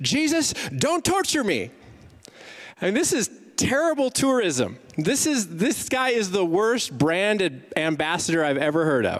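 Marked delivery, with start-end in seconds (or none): 0.0-1.7 shrill, very high, swooping scream. Telling of a naked man running out of a tomb, retelling a scream. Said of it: "runs out of a tomb and screams".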